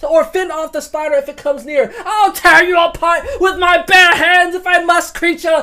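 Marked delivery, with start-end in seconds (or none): 2.0-5.6 furious, defiant roar, anger boiling over. Trapped, Robert defies the spider threatening his companions: Robert roaring in defiance. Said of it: "[name]'s anger boils over, / your grace".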